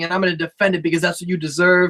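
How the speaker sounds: ordinary delivery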